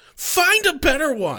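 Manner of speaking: offended and affronted, very high and slow. Retelling a character's reply to a figure of speech: imitating someone offended. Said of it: "And he's just so offended".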